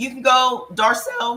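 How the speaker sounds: voice cracking. Host tells a caller to get her foods list; voice cracking. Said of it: "I don't know why my voice is cracking".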